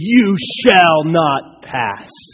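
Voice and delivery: drawn out with full authority. Retelling a movie scene where the wizard faces a monster: authoritative Gandalf voice. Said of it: "some of the most authoritative words anyone has ever spoken".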